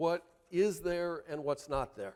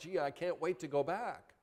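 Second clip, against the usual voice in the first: put-on eager kid voice, much quieter; 5 dB quieter than usual. Grandparent contrasting how a grandson talked about school, mock-eager kid voice. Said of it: "he didn't say it like".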